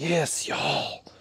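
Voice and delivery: whispered under the breath, hushed. Landing a fish from a boat, excited: whispering. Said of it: "I don't know why I'm whispering".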